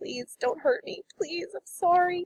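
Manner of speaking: very high, quiet, weeping voice, softly pleading. A wounded woman in the game begs the players, crying very quietly. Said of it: "she's crying very quietly, begging you".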